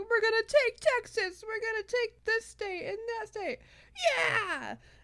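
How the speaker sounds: very high, shrill, whooping rally shout. Retelling a candidate on TV naming places: imitating Howard Dean shouting. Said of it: "he was just shouting all of the names".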